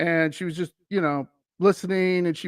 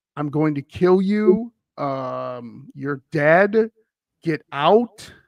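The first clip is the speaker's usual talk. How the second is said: mock whisper, lower and slower; 2 semitones lower than usual. Recounting what guests said someone whispered to them: imitating a whisper in the ear. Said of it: "someone whisper in their ear".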